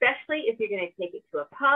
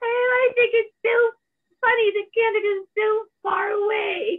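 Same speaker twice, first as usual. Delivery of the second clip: put-on very high, shrill, loud, drunken British witch voice; 13 semitones higher, 5 dB louder than usual. Imagining the Queen drunk in the pub, drunk Queen impression. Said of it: "You were sounding a little bit like a drunken British witch".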